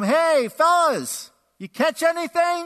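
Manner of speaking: very high, shrill, drawn-out yell. Retelling a guy on the shore calling to fishermen: imitating a yell. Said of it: "he yells out to him".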